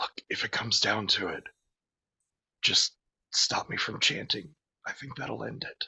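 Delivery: close, leaning-in whisper. Voicing a character who leans in to another: whispering in character. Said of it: "and whisper".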